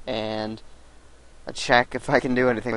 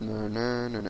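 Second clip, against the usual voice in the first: monotone imitated voice. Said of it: "The guy has a really monotone voice".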